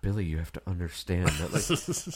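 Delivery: very low, hushed whisper. Retelling how a man in a control room spoke on the phone to Billy, imitating someone whispering. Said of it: "He's like whispering. He's like".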